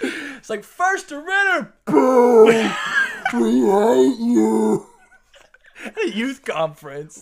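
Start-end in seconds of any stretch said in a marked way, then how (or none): 0.6-4.9 put-on loud jeering crowd, higher and louder. Retelling how one youth group greeted a rival church: imitating loud booing crowd. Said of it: "very loud, very heartfelt booing".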